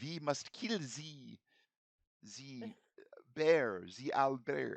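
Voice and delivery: bad fake French accent. Voicing a wizard failing at the elven tongue: bad French chef voice. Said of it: "Sounds like bad, a bad French chef".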